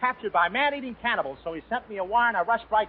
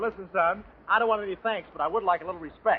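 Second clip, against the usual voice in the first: normal talking voice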